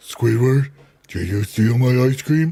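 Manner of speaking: cartoon starfish character voice. Joking about a show, doing a Patrick from SpongeBob voice. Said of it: "I sounded like Patrick from SpongeBob".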